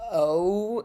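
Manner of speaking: standard American gliding O diphthong. Showing how the O in boat sounds in standard American English: standard American O diphthong. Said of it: "the way that I say it is kind of two vowels".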